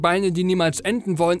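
ordinary delivery

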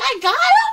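very high-pitched, very loud yelp. Repeating their own reaction to getting the kill, high-pitched voice. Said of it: "I was like".

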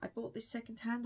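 ordinary delivery

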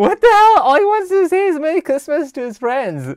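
high, loud, laughing outburst of disbelief.

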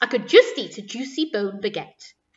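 ordinary delivery

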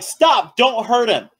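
woman's voice, high, urgent yelling out. Narrating the scene, voice a lady in the group yelling toward the players.

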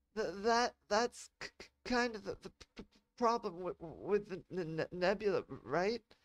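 stuttering. Asked whether she can pick up anything in the nebula, [name] answers, stuttering. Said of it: "[name] stuttered".

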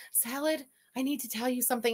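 imitated nervous voice. Acting out an imagined confession: imitating someone nervous. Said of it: "And she's all nervous".

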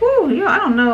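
voice jumps up high on the word "price". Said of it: "my voice gets high".

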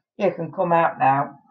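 ordinary delivery

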